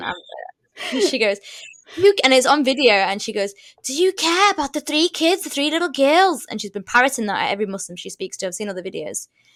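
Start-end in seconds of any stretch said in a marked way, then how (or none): 3.8-6.5 put-on Liverpool Scouse accent, pitched up. Retelling a protester's question across the road from a mosque, Scouse accent. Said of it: "I have to do the Scouse accent".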